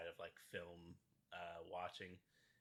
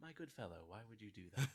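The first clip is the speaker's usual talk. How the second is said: very calm, composed, unruffled tone, raised voice; 4 semitones higher, 5 dB louder than usual. Describing a movie scene, quoting a character's reply in a very calm voice. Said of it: "in a very calm voice".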